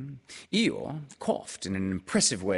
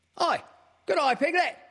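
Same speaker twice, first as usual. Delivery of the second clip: very high, loud squeaking voice; 5 dB louder than usual. Narrator reading Roo greeting Piglet, squeaking. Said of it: "he squeaked".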